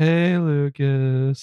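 mock dull, unimpressed, lifeless, slightly high delivery. Retelling how the characters greet Lucas: imitating a lifeless greeting. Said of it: "fairly, fairly lifeless".

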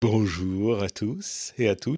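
silky, slightly suave, smooth voice. A returning guest greets the listeners in a smooth suave voice. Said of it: "J'essaye de prendre une voix un peu suave".

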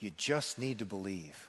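low, soft sarcastic jab.

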